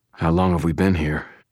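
ordinary delivery

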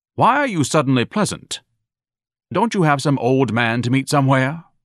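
distrustful, wary. Ignatius questions his suddenly pleasant mother, suspicious. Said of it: "Ignatius asked suspiciously".

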